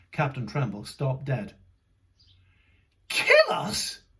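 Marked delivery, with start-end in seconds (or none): 3.0-3.9 very high-pitched, aghast, horrified tone. Reading a story aloud, voicing a captain who hears of danger: horrified. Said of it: "he said, horrified".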